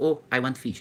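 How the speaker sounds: ordinary delivery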